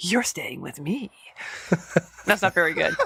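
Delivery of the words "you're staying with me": soft, seductive character voice. Trying out voices for a character clamping down on his panicking cat: character voice try. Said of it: "let me try with double pleasance".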